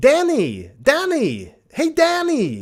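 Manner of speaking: fake American accent, Australian twang, very slow, very high. Retelling how the film's actors said a name: imitating Australian twang in American accent. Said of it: "a weird Australian twangy colonial New Zealand accent".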